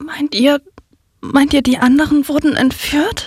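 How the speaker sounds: shaky, trembling, quavering voice. Narrator reads Louise's question to the others, trembling voice. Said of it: "Fragt Louise mit zittriger Stimme".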